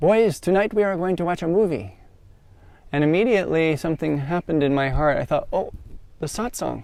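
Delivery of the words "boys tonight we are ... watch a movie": put-on beautiful Italian accent, pitched up. Retell the head monk's announcement to the boys in Brahmachari Vito's beautiful Italian accent. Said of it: "in his beautiful Italian accent".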